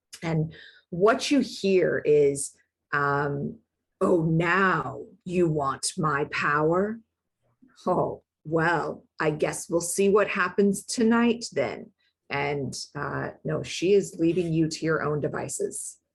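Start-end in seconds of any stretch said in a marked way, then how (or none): 4.0-11.9 low deep growling voice. Narrating the voice the listener hears inside, in a low deep growl. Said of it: "this low, deep growl".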